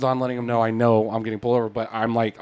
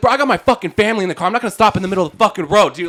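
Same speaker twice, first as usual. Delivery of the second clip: acted-out, forceful, high-pitched yelling; 8 semitones higher, 5 dB louder than usual. Retelling an argument with a man who chewed him out, retelling own yelling back. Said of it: "I started yelling back at him".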